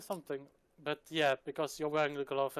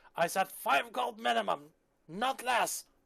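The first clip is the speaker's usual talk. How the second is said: high, rough, creaky, drawn-out furious scream; 7 semitones higher than usual. Voicing someone in a bazaar screaming over a price: screaming angrily. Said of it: "it's somebody screaming".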